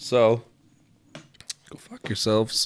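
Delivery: voice breaking mid-line, cracking at the end. Signing off to the audience at the end: voice cracking. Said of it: "My voice cracked".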